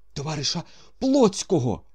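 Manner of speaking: heavy panting, very high and loud. Narrator voices a man calling out a comrade's name, breathing heavily. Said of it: "важко дихаючи".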